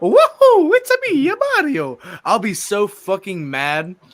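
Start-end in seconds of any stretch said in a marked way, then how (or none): 0.0-2.0 very high, loud, swooping cartoon voice. Showing how the actors should sound in the movie: Mario voice. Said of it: "pull a perfect".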